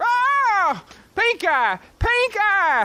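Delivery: long, slow, drawn-out, very high yell. Searching for a lost possum, calling its name: yelling. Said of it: "Why were you yelling".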